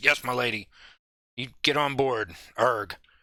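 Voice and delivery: put-on gruff voice. Narrating a game scene, voicing the captain's reply to the lady: gruff Captain Skywise voice. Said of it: "he gets that gruff voice".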